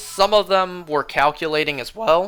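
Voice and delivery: voice cracking, breaking partway through the line. Describing answers on an exam, voice cracking. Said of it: "My voice cracked".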